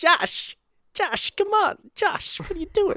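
high-pitched, dramatic calling delivery. Showing an impersonation of a West Wing character calling to Josh: Jimmy Smits impression. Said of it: "my impersonation of his character from The West Wing".

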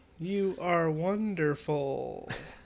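default text-to-speech, robotic computer voice. A podcast host praises a listener, Microsoft Sam voice. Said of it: "Sounds like Microsoft Sam. The computer's default voice".

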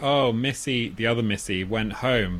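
ordinary talk, nothing marked

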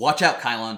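loud shouted yell. Narrating a fight, voicing Lily as she warns Kylon, yelling a warning. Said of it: "Lily just yells out".

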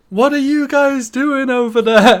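very high, very loud, shrill holler. Recounting a fight near the ring, the speaker quotes a woman: retelling a woman yelling. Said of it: "The woman yells".

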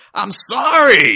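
very high, very loud, shrill, sassy voice. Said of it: "this really sassy".

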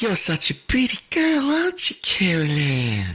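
put-on creepy old man character voice, high sing-song. Continuing another speaker's impression of a film character, in a creepy old man voice. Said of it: "creepiest old man characters".

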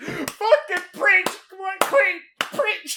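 crying while cheering. Retelling cheering on a speech from the background: imitating own crying. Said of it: "I'm just here crying in the background going".

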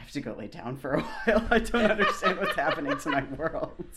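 loud, fast, laughing mock despair.

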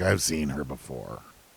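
put-on muttering under breath. Speaker recaps a show, acting out a character's line, mimicking a mumble under breath. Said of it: "under his breath, like mumbles".

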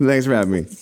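put-on quick, rushed, hurried throwaway delivery, old panel-show style. Mimicking an old TV panel guest's greeting: rushed out quickly. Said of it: "in the old TV panel style where you're like, ... We kind of like rush it out".

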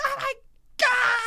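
very high, crying, wailing yell.

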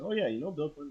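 acted breezy offhand tone. Contrasting a casual mention with the real remark: imitating an offhand passing remark. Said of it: "in passing".

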